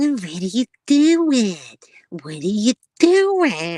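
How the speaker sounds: loud, high-pitched, whiny complaining voice. Imitating a man who always goes high and whiny, mock whiny high voice. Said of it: "he does it with that whiny voice. It always goes really high pitched".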